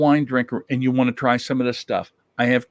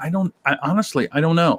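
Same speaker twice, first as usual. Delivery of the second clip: ordinary talk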